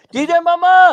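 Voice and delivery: very loud, high, piercing shout. Offering to yell it on the show for Emma: yelled DJ Mama. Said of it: "do you want me to yell it on on on the on the show".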